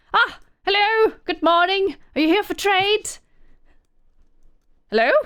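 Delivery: very high, hailing call. Voicing a character leaning over to greet a group: Trinae calling out to strangers. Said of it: "lean over and is like".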